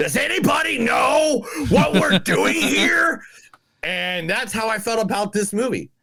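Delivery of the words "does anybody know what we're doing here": high-pitched screaming. Retelling a commercial where John Taffer screams at everybody: imitating John Taffer screaming. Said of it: "where he screams at everybody going".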